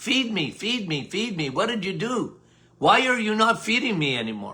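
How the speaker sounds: pleading, crying-out, begging bear voice. Voicing gut yeast bears that cry out to be fed: yeast bears crying out. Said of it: "they cry out".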